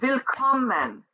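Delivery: willkommen, middle syllable kom stressed. German word lesson: stress on kom in willkommen. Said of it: "the syllable that is accentuated is that middle one".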